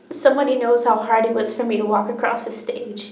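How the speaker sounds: usual speaking voice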